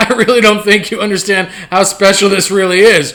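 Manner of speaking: usual speaking voice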